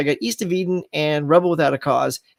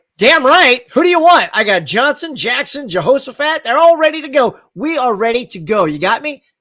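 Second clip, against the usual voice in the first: mock bold stage-actor projection, loud and full-voiced; 7 semitones higher, 5 dB louder than usual. Acting out a scene opposite a whispering actor, the speaker answers not whispering back. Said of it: "like not whispering back".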